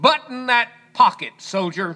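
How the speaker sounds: barked, military-style, commanding voice. Telling how an officer ordered a young soldier: retelling a barked command. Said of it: "barked out in his best command voice".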